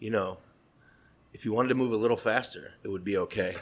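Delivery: very sweet, gentle, soft murmur. Retelling a remark someone leaned in to make while plating: imitating Michael Anthony quietly and sweetly. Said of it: "very quietly and very, very sweetly".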